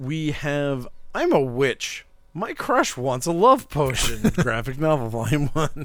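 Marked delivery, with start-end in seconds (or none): 0.0-4.3 put-on storybook witch voice. Reading out a graphic novel title from the list: witch voice. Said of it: "That was my witch voice".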